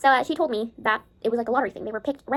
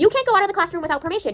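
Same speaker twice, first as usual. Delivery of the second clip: mock scolding, yelled loudly; 4 semitones higher than usual. Recounting an elementary school teacher scolding them outside class, imitating a teacher yelling. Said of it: "starts yelling at me".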